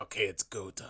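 calm, hushed, raspy, gravelly demonic whisper. Retelling what a woman says in a scene with Johnny, gravelly devil-like voice. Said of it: "she sounds like a devil because it's so gravelly".

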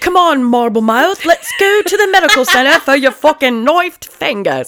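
put-on sliding into Australian accent. Doing mock commentary on Rose's knifed fingers, the speaker slips into an Australian accent. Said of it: "that got really Australian".

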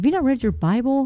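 mock, slightly heated, annoyed, mildly angry tone. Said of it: "I kinda got a little angry".

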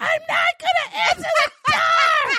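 very high, loud screamed yell. Retelling shouting back and forth with him through the door, retelling a yell. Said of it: "I'm yelling".

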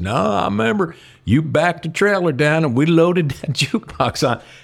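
put-on real rural country-boy accent. Retelling Billy's reply to him about the jukebox: Billy's country accent. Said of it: "I will do his accent. Billy is a real country boy".

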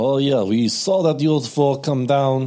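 Russian-accented voice. Voicing the locals after being asked for a russian accent. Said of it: "can you do a Russian accent?".

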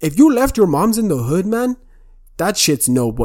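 odd-sounding put-on Toronto accent, pitched high. Retelling a viral clip about the Toronto accent: imitating a Toronto accent. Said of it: "It's the chick where she's like".

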